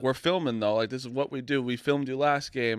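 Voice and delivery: normal talking voice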